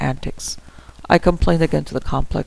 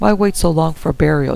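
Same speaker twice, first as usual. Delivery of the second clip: usual speaking voice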